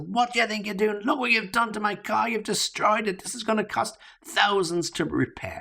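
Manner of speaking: very high-pitched, furious outburst. Acting out a driver whose car was hit, furious outburst. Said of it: "you could hear the fury in his voice".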